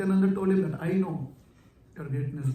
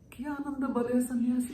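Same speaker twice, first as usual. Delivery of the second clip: very, very innocent, pitched-up voice; 7 semitones higher than usual. Retelling a story as one figure asks a question: imitating a very innocent voice. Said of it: "in a very, very innocent voice".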